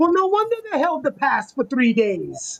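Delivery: thick, hard put-on Scottish brogue, pitched high. Retelling a friend's dad's remark about an actor, imitating his hard accent. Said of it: "his father is has the hard accent".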